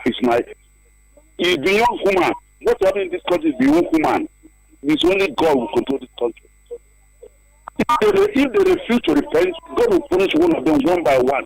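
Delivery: enraged, very high-pitched, swooping angry outburst. Calling in to complain about the country's leaders: very angry. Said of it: "I understand the fact that you're very angry".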